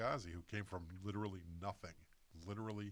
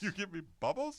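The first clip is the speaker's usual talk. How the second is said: shrill, very loud, high-pitched holler; 12 semitones higher, 8 dB louder than usual. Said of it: "He's like".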